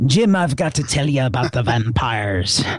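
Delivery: put-on Irish accent. Telling Jim about an author in Ireland, in Bob Curran's Irish accent. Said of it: "there's a gentleman in Ireland".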